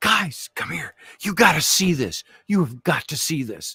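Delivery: put-on eager, excited, childlike urgency. Retelling a friend storming in to fetch them: imitating Jeff excited like a little kid. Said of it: "He's like a little kid".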